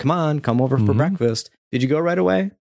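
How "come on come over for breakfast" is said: mock yelling. Describing a game where the dad calls you to breakfast: retelling the dad's yell. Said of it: "the dad just starts yelling at you like".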